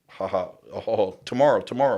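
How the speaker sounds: scoffing, amused, laughing, mocking brush-off. Retelling guards answering how long the stay is: imitating guards laughing. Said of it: "they're, like, laughing".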